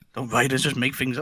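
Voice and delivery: soft, hushed half-whisper under the breath. Retelling a remark Charlie made about writers: imitating Charlie half-whispering.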